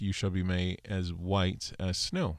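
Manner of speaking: normal talking voice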